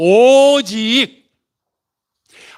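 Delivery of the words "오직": stress on 오직, drawn out slowly, higher pitch. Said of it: "하나님의 말씀을 묵상하는 게 아니라 하나님의 말씀만".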